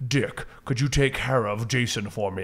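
put-on weird mixed English accent. Describing a TV show scene, voicing a character in a weird mixed English accent. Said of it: "I'm trying to do that weird mix of like English accent".

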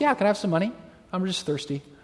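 mock casual, offhand, easygoing, nonchalant delivery. Retelling a man on the street asking for money: imitating a nonchalant man. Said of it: "he just so nonchalant".

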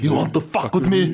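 put-on devil voice. Repeating a classic line to friends, in a devil voice. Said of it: "look at the devil".

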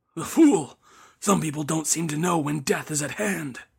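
muttering under the breath. The priest walks away after Wong insists, muttering under his breath. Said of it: "muttering under his breath".

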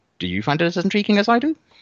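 voice jumping way up, very high, rising. Previewing a fight and asking the others if they agree, voice going up high. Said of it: "Your voice went up very Kramer-esque there".

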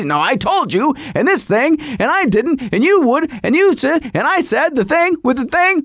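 acted, heated, frantic yelled tirade of half-sentences. Retelling a spouse's rant during a family mishap: imitating wife yelling. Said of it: "You have been yelling like a crazy person".

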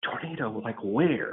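hushed, under-the-breath half-whisper. Retelling a question from a wife on a Zoom call: imitating someone half-whispering. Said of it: "she's trying to whisper because she's on the Zoom call".

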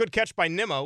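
sarcastic tone with obvious irony. Commenting on a fielder who ran past the ball: sarcastic. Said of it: "I say it sarcastically".

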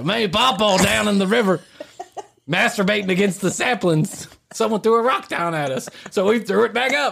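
coarse, rough backwoods Southern drawl. Contrasting it with the other kind: lowbrow southern accent. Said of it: "And then there's".

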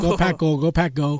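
plain

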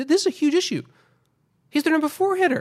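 pitch climbing very high. Discussing a struggling number four hitter before the playoffs, voice rising high-pitched. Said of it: "How much higher can my voice get?".

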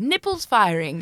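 words spoken in a put-on British accent. Showing how a british person could say the phrase: put-on british accent. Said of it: "It's that British accent".

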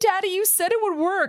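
very high, tearful, sobbing voice. Retelling a daughter let out of a holding cell, speaking to her father, imitating someone sobbing. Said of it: "And she's like sobbing".

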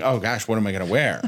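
flustered, frantic, panicky fretting voice. Retelling what gets said before going somewhere nice: imitating own panicking. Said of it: "I'm panicking and going".

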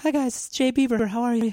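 put-on very high-pitched little boy voice. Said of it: "Ryan has a great little boy's voice".

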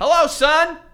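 high, shaky, trembling, quavering voice. Imitating a father greeting his son: shaky voice. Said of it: "Why are you shaking?".

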